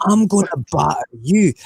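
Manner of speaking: put-on Scottish accent. Unable to do a Cockney accent, the speaker substitutes a put-on Scottish accent. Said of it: "so I'm going to do a Scottish accent for it".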